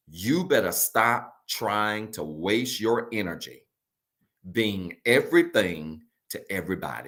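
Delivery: slow, deliberate, spelled-out word-by-word delivery. Speaking to viewers online after announcing they'll say it slow: said slowly. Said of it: "I'm going to say it slow".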